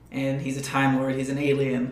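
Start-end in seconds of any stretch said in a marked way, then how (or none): none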